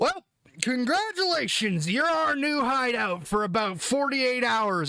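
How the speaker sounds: swaggering, casual pirate voice. As an officer strolling into a place, sarcastically welcoming the locals, announcing you're using it as a hideout. Swaggering, casual. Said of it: "And then behind him walks in pointed hat, long cloak and everything, obviously trying to look like a pirate captain of old [name], but all of it is made of Kevlar synth thread. And all of it is obviou".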